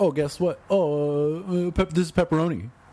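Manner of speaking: high, rattled-off mock announcer voice. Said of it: "and was like".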